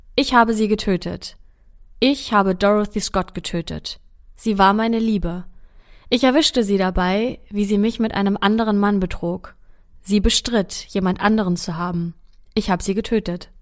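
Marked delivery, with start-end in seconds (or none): none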